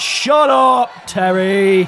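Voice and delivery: loud hollering yell. Voicing someone nearby yelling at a captive: yell. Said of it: "the distinct yell of someone else nearby".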